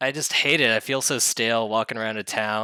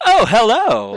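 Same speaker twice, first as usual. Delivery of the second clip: cheerful put-on character voice, higher and louder; 13 semitones higher, 11 dB louder than usual. Mocking game voice acting in a post-apocalyptic world: mock cheery NPC voice. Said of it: "Everybody is so cheery".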